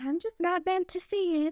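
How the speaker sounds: put-on very high voice, heavy Southern accent. Retelling what her mother said after missing the birth: imitating her mother's Southern voice. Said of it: "her very Southern voice".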